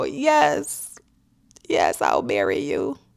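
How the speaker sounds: acted weeping, high, slow and tearful. Retelling accepting a marriage proposal while both were crying, retelling a tearful yes. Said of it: "I'm crying, and I go".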